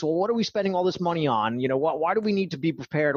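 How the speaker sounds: skeptical, doubtful average-person voice. Talking about government, the speaker does an average government skeptic impression. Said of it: "my average government skeptic impression".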